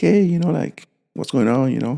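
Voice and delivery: fake casual tone. Retelling how she greeted them when she came back, mimicking a forced casual tone. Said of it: "trying to be all like".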